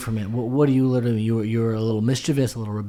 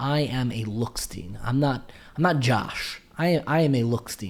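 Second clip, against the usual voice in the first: ordinary delivery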